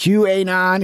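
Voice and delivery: put-on Chicago-style accent. Mimicking how the speaker in the clip says qanon: imitating a chicago accent on qanon. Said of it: "He's that Chicago accent".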